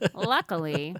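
dry sarcasm. Repeating a word from the recap to make the sarcasm plain: sarcastic. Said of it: "I was trying to be sarcastic there".

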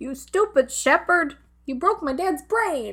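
put-on high-pitched little-boy yell, kept small. Retelling a scene where the little son yells at Derek: imitating a boy yelling. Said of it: "the son, starts yelling at Derek".

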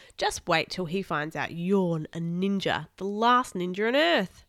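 ordinary delivery

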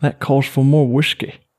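high Irish accent. Speaker pausing after a long explanation, doing a Conor McGregor impression. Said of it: "I tried to do my Conor McGregor".

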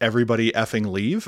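ordinary delivery

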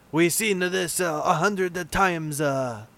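slow, clumsy, really bad put-on French accent. Repeating a line jokingly: really bad french accent. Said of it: "That was a really bad French accent".

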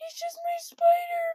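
acted-out, very high, high-pitched sobbing and bawling. Retelling arguing with her mom over the spider, acting out her own bawling. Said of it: "So I'm bawling".

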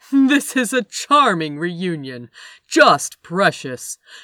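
very loud, booming, too-loud American voice. A narrator reads a voice cutting into a reunion, in a loud booming American voice. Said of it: "a too loud American voice boomed out".

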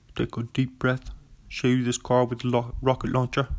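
put-on British actor voice. Doing an impression of Michael Caine offering a car: Michael Caine impression. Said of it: "That's my Michael Caine impression".

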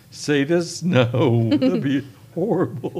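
laughing through the words, cracking up mid-sentence. Speaker cracks themselves up mid-answer, laughing. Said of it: "Sorry, I'm laughing".

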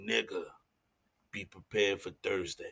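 very soft, hushed, menacing tone. Quoting a friend's voice note about Thursday, imitating Carter's menacing voice note. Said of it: "the most menacing voice note I ever heard".

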